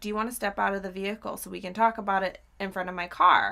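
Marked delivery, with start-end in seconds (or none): none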